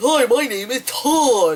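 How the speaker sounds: high, slow, dopey voice with words drawn out. Retelling a joke about people named todd, in a put-on voice. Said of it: "You do that voice made me laugh".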